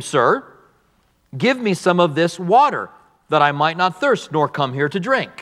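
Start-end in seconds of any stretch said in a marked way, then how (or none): none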